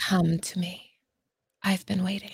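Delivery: close, intimate, soft, hushed ASMR voice. Given one chance to say the line, delivering it in ASMR style. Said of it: "Say it in an AMSR".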